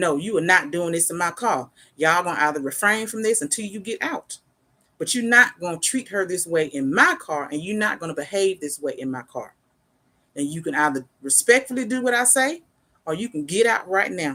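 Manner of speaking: stern, forceful, firm, no-nonsense tone. Retelling what you say to arguing couples in your car: imitating own forceful tone. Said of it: "Yes, I'm forceful".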